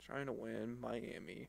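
depressed, glum, barely audible mutter. Making a football betting pick, sounding depressed. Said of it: "You sound so depressed".

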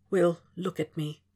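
firm, stern, hard-edged tone. Reading fiction aloud, a character gives an order: lowered stern hard voice. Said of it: "Hannibal lowers his voice, stern and hard".

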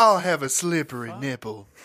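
put-on Southern accent. Ordering a random cocktail as a joke: southern accent. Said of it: "in a southern accent".

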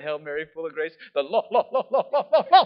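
very loud, stuck stutter on "Lord". Retelling being dunked in cold water while praying: imitating own stutter. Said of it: "And I start to stutter".

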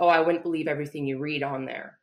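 put-on dismissive scoffing tone. Retelling what the surgeon's assistant said about the Facebook page: imitating a scoffing remark. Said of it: "scoffed at me".

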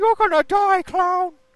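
piercing, very loud, high, put-on comedic screaming shout. Retelling a comedy film scene at a listener's urging: Adam Sandler screaming.

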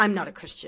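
put-on angry comeback. Retelling what a woman at the shelter said: imitating an angry reply. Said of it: "she said it very, um, angrily".

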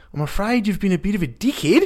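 put-on heavy, strong New Zealand accent, very high-pitched. Retelling what a new zealand woman working in the hostel said, strong new zealand accent. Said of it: "real strong accent".

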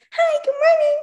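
very high, loud, chipper and cheery voice. Retelling what a friend said getting in the car: imitating a cheery morning person. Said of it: "she's a morning person".

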